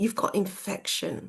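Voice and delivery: really disappointed, let-down, deflated tone. Retelling what a nurse said after a blood test: imitating a disappointed tone. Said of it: "really disappointed".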